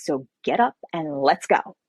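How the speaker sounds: slow, drawn-out, sarcastic, sulky petulant drawl. Retelling how a character woke the author at night: sarcastic petulant Indigo voice. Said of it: "she was a sarcastic little thing, petulant".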